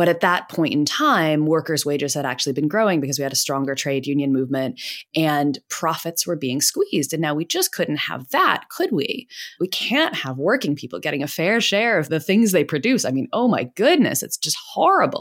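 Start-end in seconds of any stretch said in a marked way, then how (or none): 7.1-15.2 thick, heavy, mocking sarcasm with swooping pitch. Explaining economic history, speaking with deep sarcasm. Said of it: "You see my deep sarcasm here".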